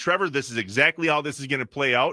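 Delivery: ordinary talk, nothing marked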